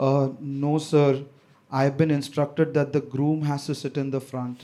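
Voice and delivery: very deep, faltering, hesitant delivery. Retelling the driver's answer to the speaker's dad, imitating a hesitant reply. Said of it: "the driver hesitantly replies".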